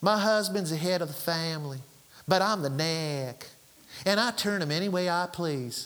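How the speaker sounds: Louisiana southern drawl, drawn out. Quoting the pastor's wife addressing the church one Sunday morning, in a southern drawl. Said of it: "in her southern drawl".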